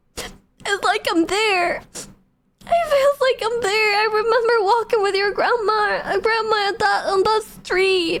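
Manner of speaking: acted-out weepy, emotional, high tearful voice. Retelling a mother's reaction after she started crying: imitating mom crying. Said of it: "let me imitate her".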